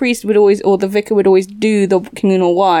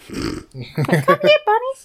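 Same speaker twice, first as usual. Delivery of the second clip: creepy put-on voice, pitched much higher; 4 dB quieter than usual. Imagining what the character sheltering the bunnies says, in Herbert the Pervert voice. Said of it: "I'm imagining the Herbert the Pervert voice".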